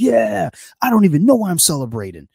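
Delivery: put-on very high, loud, child-like shrieking scream. Retelling a kid's reaction to a Michigan win: imitating a kid screaming.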